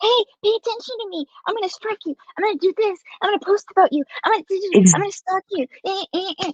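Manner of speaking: mocking, needling tone. Retelling how a rival keeps coming at them: mocking imitation of a rival. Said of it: "you keep coming up like".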